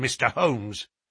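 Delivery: ordinary delivery, nothing marked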